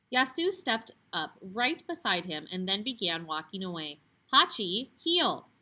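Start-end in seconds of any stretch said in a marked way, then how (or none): 4.3-5.3 firm, stern, raised voice. Yasu commands the dog Hachi to heel, stern. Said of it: "spoke in the stern voice".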